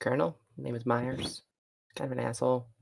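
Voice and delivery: very quiet, voiceless half-whisper. Half-whispering to a character in the scene who the other speaker is: half-whispering. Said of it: "whisper to him and tell him who he is".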